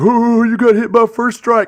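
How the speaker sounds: loud, high, play-acted words spilling out mid-laughter. Retelling a paintball game, quoting Dylan: imitating someone laughing while talking. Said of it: "Dylan was laughing".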